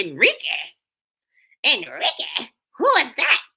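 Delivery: play-acted, swooping, sing-song up-and-down yelling. Retelling how Miss Anita yelled a name: imitating Miss Anita yelling. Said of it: "That's how she yelled it".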